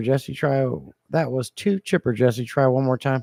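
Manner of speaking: ordinary talk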